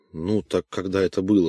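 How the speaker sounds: ordinary delivery, nothing marked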